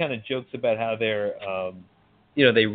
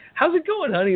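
chipper, sunny, cheery voice, pitched very high. Retelling a film scene where Kurt Russell walks in: cheery Kurt Russell impression. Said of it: "he's so cheery".

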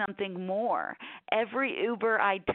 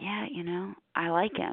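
mock whispering. Retelling what people at a high school reunion said: imitating someone whispering.

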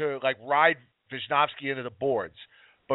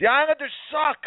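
put-on child yelling, much higher; 13 semitones higher than usual. Speaker retelling a seven-year-old heckling at a game, retelling a yell. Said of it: "she yells out".

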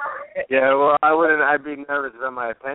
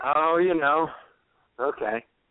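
gloomy, dejected, depressed, sunk-down delivery. A guest asked how he's doing answers, sounding depressed. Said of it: "You sound depressed".

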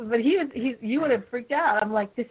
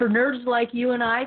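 usual speaking voice

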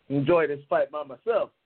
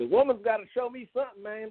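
sudden put-on country accent, pitched up; 7 semitones higher than usual. Talking about a woman on the show, the speaker slips into a country voice. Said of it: "I don't know why I did a country voice".

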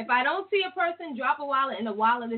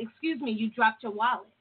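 plain

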